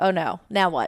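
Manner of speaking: sudden flustered, panicked, alarmed outburst. Retelling finding the deer still breathing: imitating her own past panic. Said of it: "now I'm panicking".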